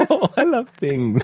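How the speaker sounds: very high-pitched, put-on Irish accent. Replying to a suggestion about having a passion, Mrs. Doubtfire Irish voice. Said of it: "your go-to Irish voice is Mrs".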